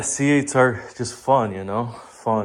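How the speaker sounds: said with open, plain sarcasm. Calling C eights fun while wrapping one: sarcastic. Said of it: "I'm saying that sarcastically".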